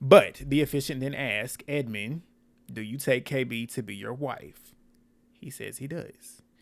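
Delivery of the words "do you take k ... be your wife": ordinary talk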